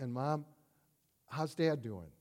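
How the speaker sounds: acted, anxious, fearful, worried voice. Retelling a daughter asking her mom how her dad is doing: retelling a fearful voice. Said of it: "said with a sort of fearful voice".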